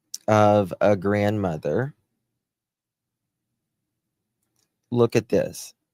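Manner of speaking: choked up, on the verge of tears. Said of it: "I'm gonna start crying".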